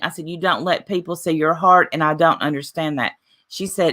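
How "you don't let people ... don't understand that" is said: ordinary delivery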